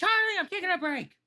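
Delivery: shrill, very high, loud yell. Voicing a halfling who leaves for a break: screaming. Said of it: "she just screams out".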